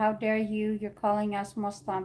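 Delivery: ordinary delivery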